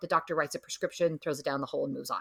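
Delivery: ordinary talk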